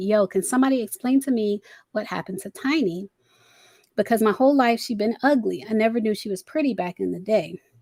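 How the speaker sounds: ordinary talk, nothing marked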